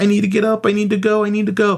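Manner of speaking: desperate begging. Acting out what a woman said after a man jumped on her, imitating someone begging. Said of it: "She's practically begging".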